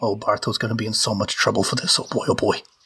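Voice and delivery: subservient, low mumbling under the breath. A player's character, ordered to hand items over, mutters to herself, muttering. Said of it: "I'm just muttering".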